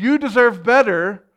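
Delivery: loud, high-pitched screaming. Acting out Satan sneaking in, the speaker gives Satan's scream. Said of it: "he screams".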